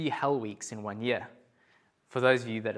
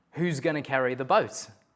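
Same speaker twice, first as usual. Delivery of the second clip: normal talking voice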